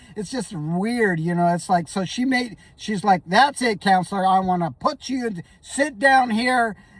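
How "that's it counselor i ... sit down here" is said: angry, stern, commanding judge voice. Retelling how the judge scolded the counselor in court: imitating an angry judge. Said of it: "she was mad".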